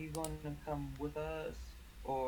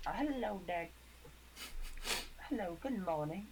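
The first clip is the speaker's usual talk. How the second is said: fake upper-class posh accent, pitched up; 5 semitones higher than usual. A player's character greets the party in the morning, in a put-on accent. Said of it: "are you still doing that accent?".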